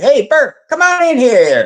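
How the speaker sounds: way too cheerful, very high and sing-song. Retelling how a guy yelled out to bert from his office: imitating an overly cheerful call. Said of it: "Real cheerful. Too cheerful".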